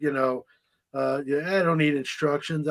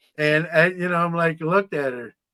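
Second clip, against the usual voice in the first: ordinary delivery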